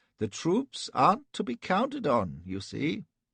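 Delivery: very high, quavering voice. Narrating Elphy's reply to Sir William, Elphy's pathetic quavering voice. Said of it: "it was pathetic to hear his quavering voice".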